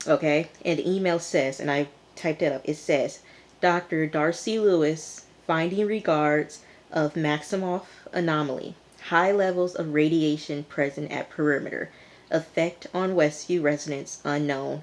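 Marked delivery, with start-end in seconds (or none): none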